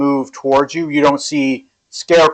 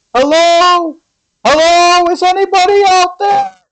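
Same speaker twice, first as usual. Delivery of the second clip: very high, rising, drawn-out cries; 4 dB louder than usual. Voicing people lost in a cornfield: screaming, calling out. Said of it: "just screaming like".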